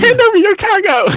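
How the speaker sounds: put-on very high, shrill, loud small-child holler. Imagining a message on his ship's screen in the game; little kid voice. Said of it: "some little 8-year-old kid going".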